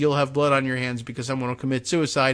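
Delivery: ordinary talk, nothing marked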